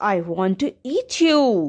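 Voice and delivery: ordinary delivery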